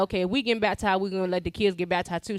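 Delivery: ordinary delivery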